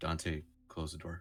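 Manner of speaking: hushed whisper. Playing a character, speaking to a fellow character named dante, whispering. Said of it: "I'm gonna try to whisper".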